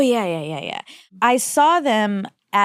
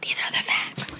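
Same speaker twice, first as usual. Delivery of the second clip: soft, breathy, hushed whispered delivery. Opening the facts segment as agreed, whispering. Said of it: "Let's do it as a whisper today".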